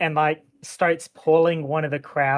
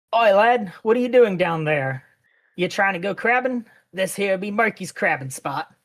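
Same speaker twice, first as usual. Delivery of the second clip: put-on old man character voice; 4 semitones higher than usual. Voicing an older man who turns to a player: old man character voice. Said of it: "You watch as this kind of older man, like, turns".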